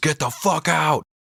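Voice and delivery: high, dragged-out scream. Retelling how Elizabeth bangs on the door at the man outside: imitating a scream. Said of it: "bangs on the door and screams".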